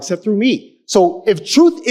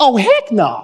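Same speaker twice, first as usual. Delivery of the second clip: put-on preteen boy voice, said his own way; 2 semitones higher than usual. Reading scripture aloud, imitating a child saying the phrase. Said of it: "I'm gonna say it like my, my eleven-year-old son says it".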